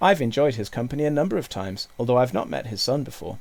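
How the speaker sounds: plain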